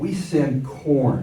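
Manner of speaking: corn drawn out slowly with derision and scorn.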